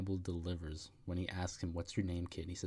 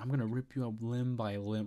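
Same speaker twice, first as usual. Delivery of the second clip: mock threatening yelling, women's voices, higher; 4 semitones higher, 3 dB louder than usual. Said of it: "they're in his face yelling".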